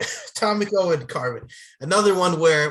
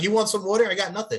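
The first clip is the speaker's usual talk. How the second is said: mocking, put-on delivery; 6 semitones higher than usual. Retelling how Joel Kane offered water and gave none: imitating Joel Kane. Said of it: "It's like".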